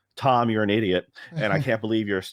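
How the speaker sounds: ordinary talk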